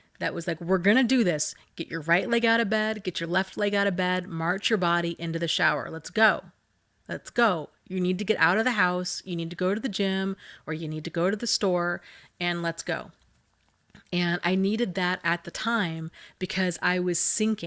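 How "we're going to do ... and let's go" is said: no-nonsense, firm, urging voice. Retelling past self-talk urging self out of bed: put-on parent voice. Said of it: "I had to have kind of that parent voice out loud".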